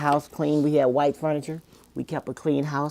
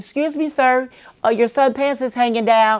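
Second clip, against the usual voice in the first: very high, drawn-out holler; 9 semitones higher, 7 dB louder than usual. Retelling calling to a man on the street from her car, hollering out the window. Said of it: "I hollered out the window".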